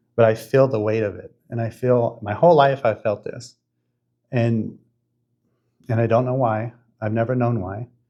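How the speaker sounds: voice welling with emotion, halting. The speaker recounts a personal experience to a listener: getting emotional. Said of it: "f- I'm getting emotional".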